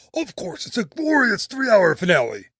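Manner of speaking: eagle puppet character voice. Recounting a classic show scene, the speaker voices Sam's reply: Sam Eagle voice. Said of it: "my best Sam Eagle voice".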